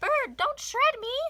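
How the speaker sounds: very high, loud, squeaky princess voice cry. Narrator reads the princess crying out as the jay grabs her, squeaky princess voice. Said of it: "The princess squeaked".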